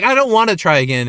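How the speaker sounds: plain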